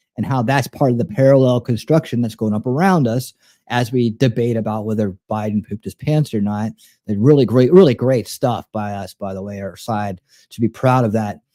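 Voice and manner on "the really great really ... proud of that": ironic, sarcastic, tongue-in-cheek delivery. Praising one's own side after a silly debate: sarcastic. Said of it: "I'm being sarcastic in case you can't tell".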